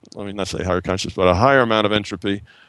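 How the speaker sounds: fast, rushed speech. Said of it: "I'm talking t-, too fast".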